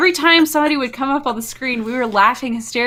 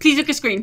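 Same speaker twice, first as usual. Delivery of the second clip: very fast, rushed, words run together without gaps; 2 semitones higher than usual. Quoting the translator's line: imitating a rushed translator, very fast. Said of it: "she said it so fast that, like, there was no spaces in between the words".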